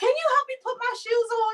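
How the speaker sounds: loud, high talk. Retelling a phone call from a man who could not hear: imitating someone talking very loud. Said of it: "I'm gonna talk the way he talks to me".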